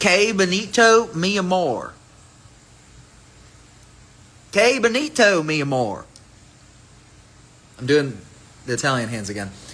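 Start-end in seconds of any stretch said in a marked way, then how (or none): 0.0-6.0 put-on Texas accent, very slow, high, drawn out. Speaker announces a Texas voice, then says Spanish words in a Texas accent. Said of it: "I'm going to do this in a Texas voice, in Spanish".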